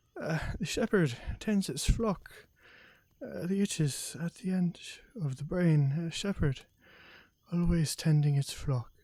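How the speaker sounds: drowsy mumbling as if asleep. Voicing a sleeping character in a game scene: sleepy muttering under breath. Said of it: "muttering under his breath".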